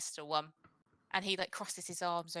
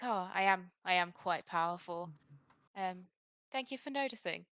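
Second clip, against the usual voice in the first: pleased, preening, self-satisfied wizard voice; 4 dB louder than usual. Voicing a wizard who is pleased by praise of his power: flattered, smiling wizard NPC. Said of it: "he smiles at you and he's like".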